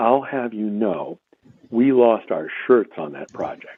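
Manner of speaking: mock low voice. Retelling how someone leaned in close to say this: imitating Steve lowering his voice. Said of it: "then he lowers his voice and he leans in close".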